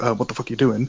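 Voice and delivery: ordinary talk, nothing marked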